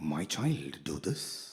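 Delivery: very deep, slow bass-baritone voice. Describing how the voice of God usually sounds: Morgan Freeman voice as God. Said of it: "Like in Morgan Freeman's voice".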